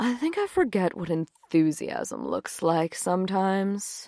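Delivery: murmured under the breath, soft and slow. Meg speaks to Jane, murmuring. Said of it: "she murmured".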